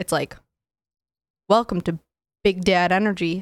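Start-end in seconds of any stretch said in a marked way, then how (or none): 1.5-3.4 punchy announcer-style delivery, hard hit on B of Big. Trying to remember how a co-host does the intro: imitating Joe's intro. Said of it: "I'm trying to remember how Joe does it".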